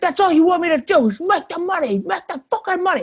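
very high, loud, angry yelling. Retelling how the neighbour yelled at her: imitating a man yelling. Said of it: "he would yell at her, like".

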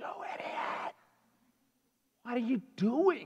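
breathy, furious whispered outburst. Retelling screaming at another driver on the road, re-enacting the scream. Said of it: "I screamed at the top of my lungs".

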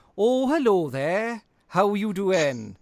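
put-on over-the-top Welsh accent. Mimicking an actor's entrance in a role, in an exaggerated stereotypical Welsh accent. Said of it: "it did sort of veer into the sort of the stereotypical".

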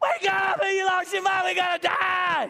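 frantic, alarmed, panicked yelling. Retelling the storm scene as the disciples wake Jesus: imitating disciples shouting. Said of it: "It's got exclamation marks 'cause they are shouting".

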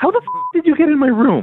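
confused, upset outburst, high-pitched and swooping. Finding someone has come into their room uninvited, the character demands how: upset. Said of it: "You sound upset".

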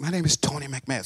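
put-on mumbling, quiet. Defendant retelling stating his name for the court, retelling a quiet mumble. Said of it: "Speak up, son".

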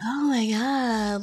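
put-on touchy-feely girl voice. Retelling a scene at a club, imitating Gigi: touchy-feely Gigi voice. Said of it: "that's kinda".

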